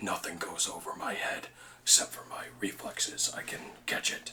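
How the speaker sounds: hushed, breathy, almost whispered character voice. Doing an impression on request: Drax voice.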